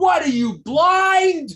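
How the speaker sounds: very high, very loud, shrill, drawn-out scream. Telling a joke about a man shoved on the subway: retelling a scream. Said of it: "screams out".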